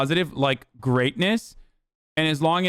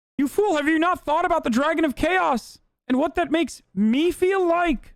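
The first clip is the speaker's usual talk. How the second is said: pitch pushed way up, cartoonish; 13 semitones higher than usual. Mocking an argument in a put-on Kermit voice. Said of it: "I'm not doing the Kermit voice".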